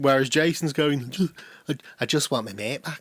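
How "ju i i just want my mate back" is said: flamboyant, heavily done Manchester twang. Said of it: "I can't do [name]'s voice".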